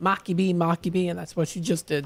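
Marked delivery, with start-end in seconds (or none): 0.0-1.1 mocking woman's voice, much slower. Describing how a woman says a man's name, imitating her saying 'marky b'. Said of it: "a little funny impression of how she says".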